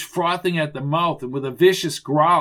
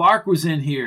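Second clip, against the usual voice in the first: ordinary delivery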